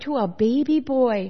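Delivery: ordinary delivery, nothing marked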